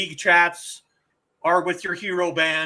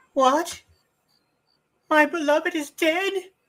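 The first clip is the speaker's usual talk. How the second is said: very high, squeaky put-on character voice; 11 semitones higher than usual. Voicing a character in a scene: squeaky put-on voice. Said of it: "Gotta do the squeaky voice".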